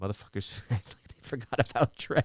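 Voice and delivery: words breaking into laughter. Reading a story aloud and slipping in a joke: laughing while talking. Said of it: "I made myself laugh".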